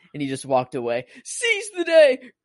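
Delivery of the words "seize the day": high, slow, loud scream. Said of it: "like, screaming".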